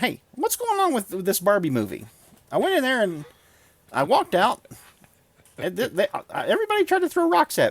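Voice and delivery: voice pushed very high up, swooping. Showing how Ben Shapiro sounds instead: Ben Shapiro impression. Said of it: "That's Ben Shapiro".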